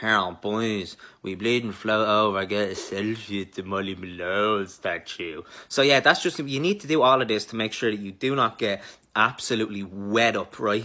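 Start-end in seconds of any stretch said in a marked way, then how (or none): 0.0-5.4 slow, put-on Dublin accent. Showing how to talk on the bus with mates: Dublin accent. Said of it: "practice a Dublin accent".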